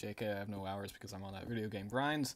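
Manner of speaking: ordinary talk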